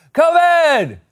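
put-on very high, loud, hollered calling-out yell. Acting out a stepdad calling his son down for dinner: shouting COVID like calling someone. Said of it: "shouting the word COVID like a suburban stepdad calling his teenage son down for dinner".

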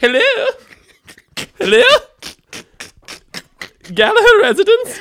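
very high, loud, posh put-on phone voice. Retelling how granny answers when someone rings, imitating granny's phone voice. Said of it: "people have phone voices".

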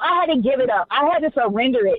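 ordinary talk

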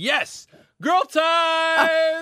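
put-on five-year-old's cheer, very high and loud. Speaker retells his five-year-old daughter yelling out, imitating a loud yell. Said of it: "she yelled out as loud as she could".

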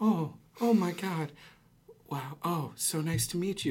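acted, high, drawn-out, self-righteous amazement. Retelling how an actor on stage reacted to the men: imitating sanctimonious shock. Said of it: "act with this sanctimonious shock".

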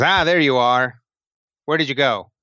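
goblin-creature voice, in character. Voicing a hobgoblin who greets the players at the docks: hobgoblin voice. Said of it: "the hobgoblin ... comes over to you and says".

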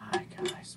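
soft, hushed ASMR-style whisper. Opening an ASMR bit for viewers, whispering. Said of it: "we need to whisper".

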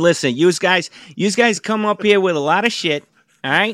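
New York Queens way of talking. Imitating how a hotel reviewer talks, in a Queens trash-truck-driver voice. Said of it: "now you sound like a guy driving a trash truck in Queens".

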